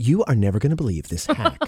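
shocked, showy online influencer voice. Imitating the voice people use in TikTok videos: shocked TikTok video voice. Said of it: "shocked by the simplest of things".

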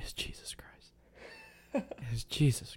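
somber, breathy, slow, hushed radio preacher whisper. Speaker mimics how a man quoted earlier sounded, in a Sunday morning radio preacher voice. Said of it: "sounded a little bit like the Sunday morning preacher on like NPR".

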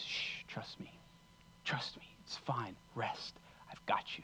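quiet, soft, breathy hushed whisper. Voicing what God says to an anxious heart: God's whisper voice. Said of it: "God's speaking in his whisper voice".

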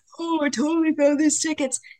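very high, boastful dad voice. Retelling how her dad took credit for the tickets, imitating her dad. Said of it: "Is that your impression of me?".

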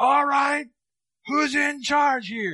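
mock, loud, very high-pitched call. Retelling how a lady announced herself on entering the program, in a loud voice. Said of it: "With a loud voice".

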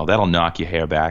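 put-on Boston accent. Quoting a line from the movie Good Will Hunting in a thick Boston accent. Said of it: "he says with a thick Boston accent".

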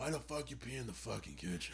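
rough, raspy smoker-like voice, yelling.

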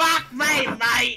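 loud, high, poor fake Australian accent. Told to scream in a poor attempt at an Australian accent. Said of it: "Australian accent, and you can scream".

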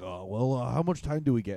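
mock whiny, complaining voice. Retelling a comic asking how much time he gets: imitating whining. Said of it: "whining and complaining".

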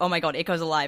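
normal talking voice

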